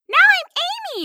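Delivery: animated, swooping, sing-song presenting voice. Mocking a joke about swapping identities: imitating Amy's voice. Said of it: "as Amy says it".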